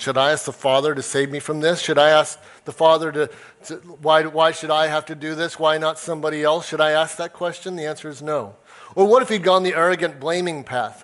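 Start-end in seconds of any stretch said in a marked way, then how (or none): none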